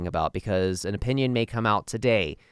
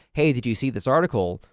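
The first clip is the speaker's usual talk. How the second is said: put-on panicked tone; 2 semitones higher, 3 dB louder than usual. Retelling asking his wife about an article, retelling a panicked tone. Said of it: "that tone of panic in my voice".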